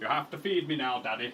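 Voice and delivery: soft put-on northern English accent in a dog voice. Explaining a delay, voicing the dog Thor asking for dinner: Thor's northern-accent dog voice. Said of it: "Don't know why I gave him a northern accent".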